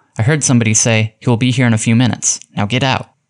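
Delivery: ordinary delivery, nothing marked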